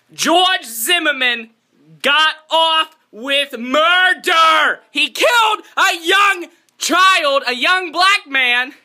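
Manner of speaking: furious, slow, deliberate outrage. Reacting to george zimmerman's acquittal: angry.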